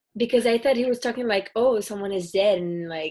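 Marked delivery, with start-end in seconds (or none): 1.5-2.6 put-on sarcasm, louder.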